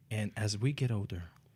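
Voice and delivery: hushed whisper. A podcast host opening the episode starts a sentence, whispering. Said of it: "You're whispering".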